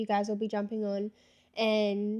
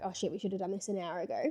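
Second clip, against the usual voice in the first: put-on muttering under breath, quieter; 2 semitones lower, 5 dB quieter than usual. Retelling what an airline worker said, imitating someone muttering under his breath. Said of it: "I heard him kinda say under his breath".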